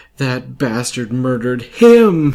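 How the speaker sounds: badly acted, high, loud fake crying through words. Mocking an actress's bad line delivery in a film, imitating bad fake crying. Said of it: "her stress on the words in her sentence while she's crying or trying to cry".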